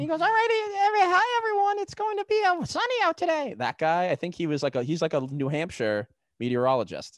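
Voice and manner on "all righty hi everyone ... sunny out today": mock man's voice, really high-pitched, much higher. Imitating a New Hampshire meteorologist greeting everyone, imitating a really high-pitched voice. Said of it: "he talks really high pitch like this".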